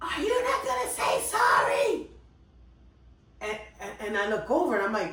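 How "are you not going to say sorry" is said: mock shrill scream, pitched very high. Telling how a lady screamed at them through the open window; retelling a woman screaming. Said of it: "It's it's a lady screaming".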